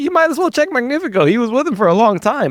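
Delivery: high loud mock female voice.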